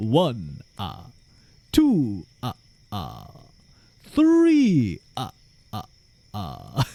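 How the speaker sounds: loud, very slow, swooping, each beat boomed. Counting aloud as the Count from Sesame Street. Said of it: "the Count from Sesame Street".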